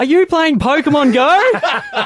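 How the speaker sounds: high, slow, mock yelling.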